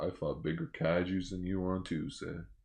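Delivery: bad put-on cowboy drawl. Playing Ultraman as if voiced by Sam Elliott: Sam Elliott impression. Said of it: "my Sam Elliott impression sounds horrible".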